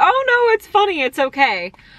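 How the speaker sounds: very high, sweet, reassuring voice. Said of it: "She's like".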